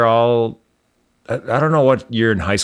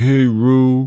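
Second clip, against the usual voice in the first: higher, louder voice slurring every word. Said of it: "The guy who talks like this".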